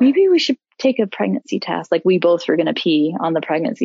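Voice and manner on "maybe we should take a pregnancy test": put-on gentle, extra-sympathetic tone, pitched up. Retelling her partner's careful reply to her crying: imitating a super empathetic tone. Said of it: "be super empathetic".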